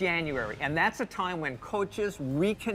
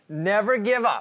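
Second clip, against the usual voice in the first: said louder; 5 semitones higher, 7 dB louder than usual. Repeating a motto after being asked to say it louder: louder. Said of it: "Say it louder".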